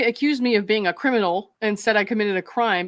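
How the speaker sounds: ordinary talk, nothing marked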